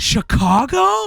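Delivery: very high, shrill, exasperated disbelief. Retelling a sister's reply in a commercial: imitating an exasperated voice. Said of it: "in the most exasperated of ways".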